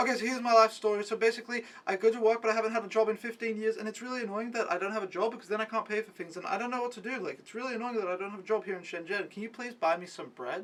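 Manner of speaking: rapid-fire, run-on rambling monologue. Retelling how a stranger rambled a life story: imitating fast rambling. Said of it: "then he starts rambling, like, so fast".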